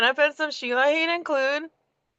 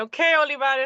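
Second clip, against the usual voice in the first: ordinary talk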